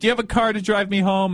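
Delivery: high-pitched, sobbing, weepy, tearful crying voice. Retelling what she said to them while crying, imitating someone crying. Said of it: "she's crying and she's like".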